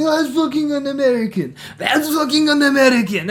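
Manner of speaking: high, teasing, jeering, mocking shouts. Retelling how everyone started mimicking the speaker, retelling a mocking yell. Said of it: "everyone's yelling at each other".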